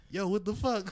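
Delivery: normal talking voice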